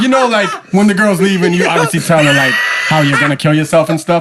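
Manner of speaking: laughing mock tone.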